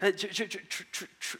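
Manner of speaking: halting stammer, repeating tr- sound. Retelling meeting an admired pastor, imitating own past stutter. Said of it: "I start to stutter".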